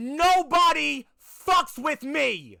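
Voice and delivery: very loud, high, slow, dragged-out bellow. Narrating a game scene, the character still looking at the body, Fox yelling. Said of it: "and then Fox just yells".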